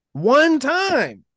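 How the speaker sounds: loud, high-pitched yelling. Arguing about a quarterback's passing yards with the other speaker: yelling. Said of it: "I don't mean to yell in your ear".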